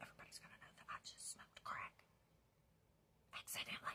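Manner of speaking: imitated whisper. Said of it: "Why are you whispering?".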